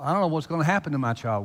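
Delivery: ordinary talk, nothing marked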